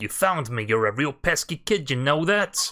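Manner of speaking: slow put-on Brooklyn accent. Voicing a character who has been found: Brooklyn accent. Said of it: "doing a Brooklyn accent".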